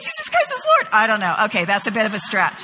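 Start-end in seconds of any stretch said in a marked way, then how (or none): 0.0-0.9 put-on teeny, very high-pitched little dog voice. Picturing the speaker's small Yorkies speaking, teeny little dog voice. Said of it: "what teeny little voice they'll say".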